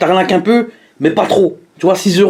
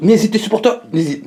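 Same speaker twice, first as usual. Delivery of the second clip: stammering, tripping over words; 2 semitones higher, 3 dB quieter than usual. Asking supporters to act at the end of a video, stammering, tripping over words. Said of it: "excusez-moi du bafouille".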